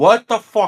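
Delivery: acted screaming. Recalling yelling from another room at someone playing a game, retelling a scream. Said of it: "I'm like screaming at her".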